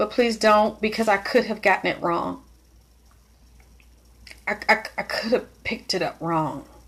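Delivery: voice right at edge of crying, tears held back. Speaker explains being upset by what was said about trauma, holding back tears. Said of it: "I'm trying not to cry".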